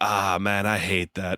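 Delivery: put-on slow, drawn-out Brazilian accent. Retelling Nogueira reacting to foot stomps while watching fights: Nogueira's Brazilian accent. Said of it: "his Brazilian accent".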